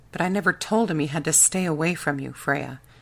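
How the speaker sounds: plain reading voice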